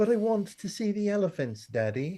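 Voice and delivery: put-on British accent, very high-pitched. Retelling own childhood plea to Daddy to see elephants: British accent. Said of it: "I also had a British accent".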